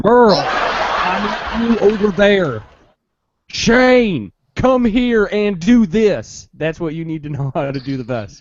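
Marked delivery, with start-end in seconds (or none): 0.0-6.5 very slow, loud, southern-accent holler. Speaker shows the zombie-outbreak skill to work on: Walking Dead southern-accent yelling. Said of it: "yelling names in a southern accent".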